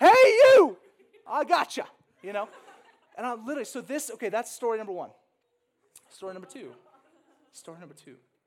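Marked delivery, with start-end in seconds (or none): 0.0-1.9 booming, very high, very loud drawn-out yell. Retelling calling out on the escalator up at Sky Harbor; retelling own yell. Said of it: "I'm yelling on my way up the escalator".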